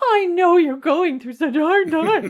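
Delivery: exaggerated, overdramatic. Showing a listener how not to ask gentle questions, overly dramatic. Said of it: "So it's not overly dramatic".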